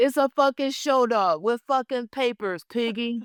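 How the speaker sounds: very high, raw, hard yelling rant. Acting out Walter yelling at a Muppet: Walter yelling. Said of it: "him just yelling at Muppets".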